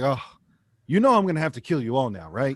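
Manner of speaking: sarcastic, tongue-in-cheek, swooping mock menace. Retelling a character's remark about the show promos: imitating sarcasm.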